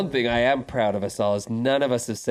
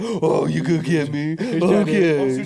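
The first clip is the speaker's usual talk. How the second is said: put-on very slow, cooing baby talk; 4 semitones higher, 4 dB louder than usual. Describing teasing a gorilla with no consequences, in baby talk. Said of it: "baby talk it".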